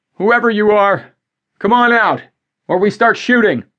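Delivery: very high, loud yelled shout. A man with a gun calls toward a noise in the brush, yelling out. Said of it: "John yelled out".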